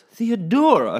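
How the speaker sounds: very high-pitched, very loud cry, heaved out. Narrator reads the mother addressing Theodora on seeing her; heaved out. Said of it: "she heaved".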